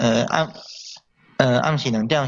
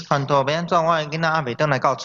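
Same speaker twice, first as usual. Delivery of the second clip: usual speaking voice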